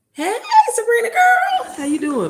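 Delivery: very high voice cracking into a squeak. Greeting someone on a video after working all day, voice cracking. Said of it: "My voice cracking again".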